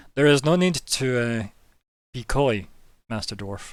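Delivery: slightly metallic voice with a faintly ringing tone. Game master voicing an unseen speaker addressing the dwarf: slightly metallic voice. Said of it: "the slightly metallic voice ring out".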